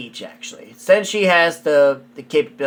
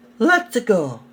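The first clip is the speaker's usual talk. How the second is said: pitched-up character voice, lifted high like a catchphrase; 7 semitones higher than usual. Repeating a catchphrase a second way, playfully: Luigi voice. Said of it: "Or like how Luigi says".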